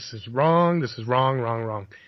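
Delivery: ordinary delivery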